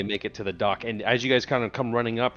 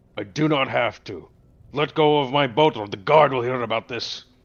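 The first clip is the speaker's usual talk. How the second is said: uncalm, furious, loud angry yelling; 6 dB louder than usual. In a role-played scene, a character confronts another character, angry yelling. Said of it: "uncalmly yelling at you to let him go".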